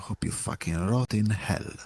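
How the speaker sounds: soft whisper under the breath. Speaking in character to the cultists, then whispering to another: whispering. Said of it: "I whisper to the other".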